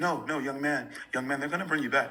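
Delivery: put-on soft-spoken man's voice. Retelling what a man from the show told him; imitating a soft-spoken man. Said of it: "he talks very soft".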